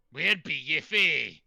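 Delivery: put-on Scottish accent. Voicing a ship captain greeting a player character: scottish accent. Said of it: "he's talking Scottish".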